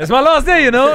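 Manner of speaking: high, loud, excited banter.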